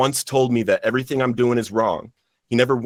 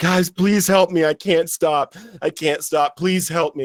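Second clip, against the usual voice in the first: put-on crying, high, slow, tearful, desperate; 5 semitones higher than usual. Retelling a plea to the Bible study group on his knees: retelling a tearful plea. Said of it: "And I'm crying and I'm crying".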